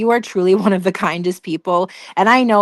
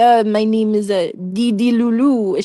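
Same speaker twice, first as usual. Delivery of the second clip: slow, faltering put-on bad accent, stopping on each uh; 2 semitones higher than usual. Retelling trying an impression on mom: Dee Dee impression. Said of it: "try out my Dee Dee, um, impression".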